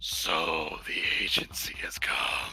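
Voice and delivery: horrible, slow, guttural, nightmarish whisper. Voicing a faceless creature that greets the agents: horrible guttural nightmarish voice. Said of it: "this horrible, guttural, just absolutely nightmarish voice".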